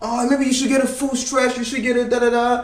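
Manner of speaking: sneering put-on hippie voice. Speaker mimics people commenting on his workout videos, mocking hippie voice. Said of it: "like Chris calls them the hippie voices".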